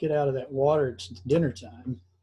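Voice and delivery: ordinary delivery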